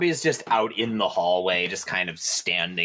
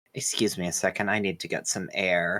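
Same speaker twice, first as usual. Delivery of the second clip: put-on whisper. Recounting how one character leans over to another, retelling a whisper. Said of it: "and whispers like".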